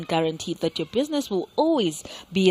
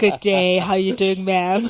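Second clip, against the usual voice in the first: mock serious, formal businessman voice, louder; 4 dB louder than usual. Joking about how the guest might have greeted: imitating a serious businessman voice. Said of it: "a serious, uh, businessman voice saying".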